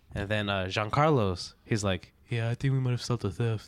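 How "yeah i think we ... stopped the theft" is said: put-on quiet, low monotone, spoken faster. Retelling what Giancarlo said after seeing an officer, imitating Giancarlo's low monotone. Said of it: "What are you saying like that?".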